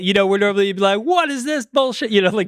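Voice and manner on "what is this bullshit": play-acted furious yell, pitched up. Contrasting how Gordon Ramsay normally reacts: imitating Gordon Ramsay yelling. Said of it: "throwing plates and stuff like that".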